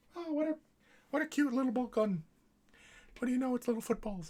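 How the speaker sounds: squeaky, very high-pitched voice. Quoting how he'd describe the little gun, in a high-pitched voice. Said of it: "He'd say it in a high pitched voice like that".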